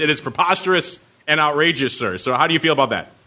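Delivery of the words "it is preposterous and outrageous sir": ordinary talk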